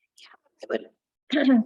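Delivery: strained voice giving out to a whisper. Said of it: "sorry, I'm losing my voice".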